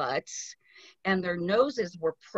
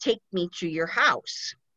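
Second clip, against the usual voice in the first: put-on boy's voice speaking strangely. Retelling a ghost story, quoting a boy who speaks strangely. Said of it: "he's saying it really strange".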